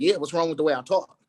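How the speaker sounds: usual speaking voice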